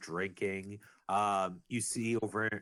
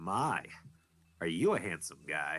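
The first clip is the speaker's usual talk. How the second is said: eccentric theatrical man voice, lower; 4 semitones lower than usual. Voicing an eccentric man who walks up to a player: eccentric man voice. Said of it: "an eccentric man ... he just goes".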